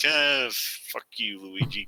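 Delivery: quiet, grumbled, under-the-breath mutter. Retelling a scene where the real-life Mario answers Luigi, Mario muttering under breath. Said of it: "under his breath".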